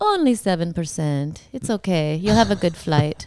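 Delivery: put-on Russian-sounding accent. Retelling what a limo driver said, imitating a Russian-sounding accent. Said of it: "a kind of a Russian sounding accent".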